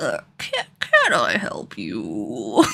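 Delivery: slow, deliberate, put-on elderly man's voice. Attempting a voice-acting bit on a short question, in a put-on old man voice. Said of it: "how do I do an old man voice?".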